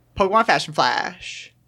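very fast, rattled-off, tongue-twister speed. Asked to say the phrase faster, the speaker repeats it fast. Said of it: "Say faster".

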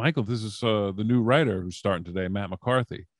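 normal talking voice

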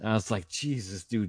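ordinary talk

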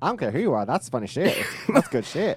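loud, high, belted comedian-style delivery. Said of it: "please don't quote Larry the Cable Guy".

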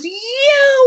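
high, loud scream. Speaker recalls being spotted on set, imitating Peter Berg screaming. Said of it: "he screams from across the street".

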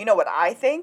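ordinary talk

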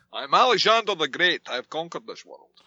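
put-on Scottish accent. Imitating Sean Connery playing Alexander the Great: Sean Connery voice. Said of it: "is talking like this".

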